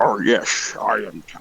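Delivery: very slow, drawn-out actor voice, words dragged out. Quoting a movie character who speaks in Sean Connery's voice. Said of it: "he does it in Sean Connery's voice".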